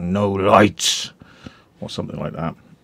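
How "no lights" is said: loud, nasty delivery forced through clenched, gritted teeth. Retelling how the man in the room refused camera lights: imitating speaking through gritted teeth. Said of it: "gritted his teeth".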